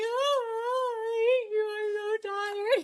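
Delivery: crying, high-pitched.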